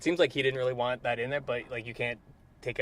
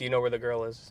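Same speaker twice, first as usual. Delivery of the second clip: plain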